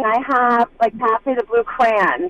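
plain

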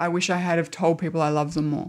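ordinary talk, nothing marked

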